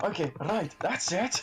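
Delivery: angry put-on character voice. Voicing Barham as he gets angry at a man: angry Barham voice. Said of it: "I just imagine a Barham going".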